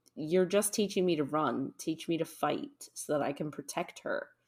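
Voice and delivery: ordinary talk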